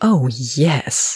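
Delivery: deep, low growled voice. Narrating a fiction passage, reading one character's reply as a growl. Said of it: "Andy growled".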